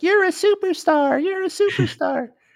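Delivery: tiny, very high squeaky voice. Describing smaller copies of James crawling out, voicing them in high squeaky voices. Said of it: "they all have like high squeaky voices".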